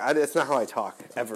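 ordinary talk

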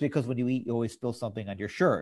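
plain

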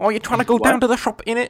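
put-on very high, very loud Cockney accent. Friends mocking British accents as unattractive, in a mock Cockney accent. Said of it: "Cockney accents or whatever the fuck they are".

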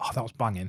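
whispering under breath. Showing how to comment to a friend during a film: whispering under breath. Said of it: "under your breath go".

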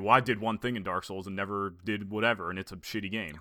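offhand, dismissive tone. Imitating what Josh was expected to say: imitating Josh. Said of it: "I was waiting for Josh to say".

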